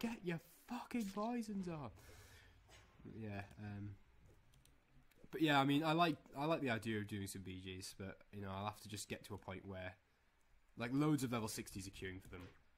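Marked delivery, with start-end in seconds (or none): 0.0-1.9 play-acted, very high scream. Imagining what people will scream at them: imitating people screaming. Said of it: "People are gonna be screaming at me like".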